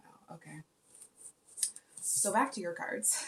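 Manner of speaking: sarcastic, tongue-in-cheek tone. Going back to the listener's cards after a sigh: sarcastic. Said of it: "I'm being sarcastic".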